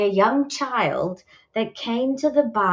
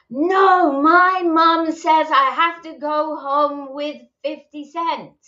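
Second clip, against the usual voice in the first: put-on high, full-throated small-girl yell at top volume; 7 semitones higher, 4 dB louder than usual. Telling a story about a girl facing a man, retelling her shout. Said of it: "she shouts at the top of her voice".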